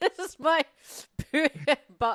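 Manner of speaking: high, loud, giggly stammer, laughing mid-word.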